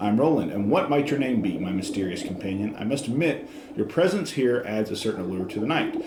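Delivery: ordinary talk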